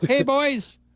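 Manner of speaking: very high-pitched voice. Imitating a north side caller's greeting: imitating Eddie the caller. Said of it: "Eddie on the north side sounds like Jesse Rogers".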